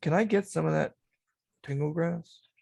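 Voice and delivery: hushed, whispered delivery. A player voices his character asking another player something, whispering. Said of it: "He whispers".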